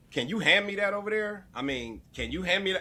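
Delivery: high, demanding, bossy tone. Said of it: "like I ain't been doing something".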